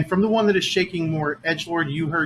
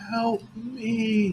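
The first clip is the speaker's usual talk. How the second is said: very thin, high little voice, "me" drawn out; 6 semitones higher, 3 dB quieter than usual. Game master voicing something inside a moving pod, in a real thin voice. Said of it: "you hear a real thin voice saying".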